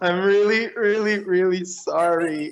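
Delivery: over-the-top, high, exaggerated, forced tearful fake crying. Told to cry while apologizing and to try harder, fake crying apology. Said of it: "Try harder".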